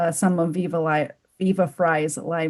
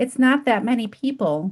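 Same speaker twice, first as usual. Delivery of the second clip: mock, whiny, complaining voice; 4 semitones higher than usual. Mocking annoying people's complaint, mock-whiny voice. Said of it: "Whiny voice implied".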